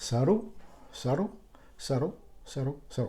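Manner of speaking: saru fading like echo. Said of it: "the echo there".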